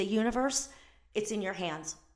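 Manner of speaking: normal talking voice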